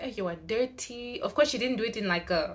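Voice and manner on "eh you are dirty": ordinary delivery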